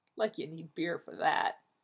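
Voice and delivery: plain reading voice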